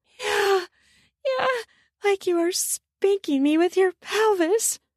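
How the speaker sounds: with desperation. Narrator reading a woman during sex with a man, desperate. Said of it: "she said with desperation".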